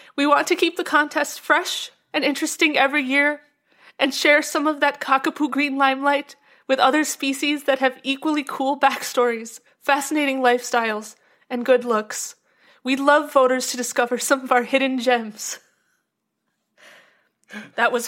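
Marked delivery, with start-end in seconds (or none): 0.2-15.6 acted out, near-tearful, about to cry. Reading a bird charity spokesperson's statement: imitating Ellen Rikers near tears. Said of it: "Your impression of her made her sound just like she was about to tear up".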